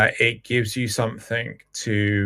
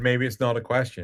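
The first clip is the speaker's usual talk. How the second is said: ordinary delivery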